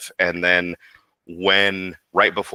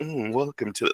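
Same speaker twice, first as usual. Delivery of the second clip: showy smug character voice, higher and quieter; 6 semitones higher, 7 dB quieter than usual. Acting out a line from a showy character he plays: showy smug Guy Crimson voice. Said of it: "he's very showy and knows he's better than everyone".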